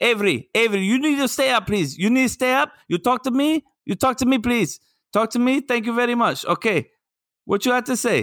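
fake, very high-pitched Brazilian accent. A dad retells talking to his daughter to keep himself awake: put-on Brazilian accent. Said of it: "I did my best Brazilian".

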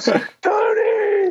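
mock very high, long stretched shriek. Retelling the speaker's 13-year-old sister calling out, imitating a scream. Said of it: "she's screaming for me".

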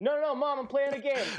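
high, sheepish voice.

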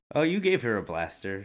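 ordinary delivery

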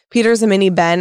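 ordinary talk

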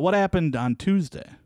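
high-pitched mock call-out. Recounting what a guy yelled out during her story, imitating him yelling out. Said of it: "the guy yells out".

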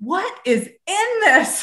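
high, slow, alarmed voice.

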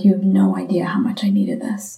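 words catching, choked-up voice, close to tears. Retelling what people said at book events: imitating someone choked up. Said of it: "choked up, tears".

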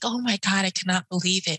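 put-on tearful, crying voice. Retelling the moment a patient died: retelling own tearful words. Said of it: "I was in tears".

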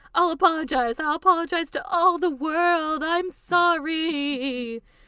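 shrill, loud screaming with "sorry" drawn out. Narrating a story, voicing the woman as she screams; screaming. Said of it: "the woman screams".

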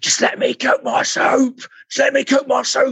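very high, repeated shout. Speaker recalls a man trying to help with their soup: retelling a shout. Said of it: "I remember just shouting at him".

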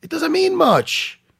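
heated, shrill, very high, very loud yelling. Arguing a fighter's loss doesn't mean much: yelling. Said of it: "I don't know why I'm yelling".

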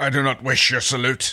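with a snarl. A character answers someone who salutes him, with a snarl. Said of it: "Dargo said with a snarl".

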